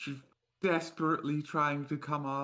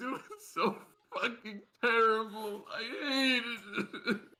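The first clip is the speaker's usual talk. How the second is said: acted breaking down in sobs, tearful, high voice; 8 semitones higher than usual. Voicing a character whose lip quivers as she breaks into tears: breaking into tears. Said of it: "breaks out in tears and she goes".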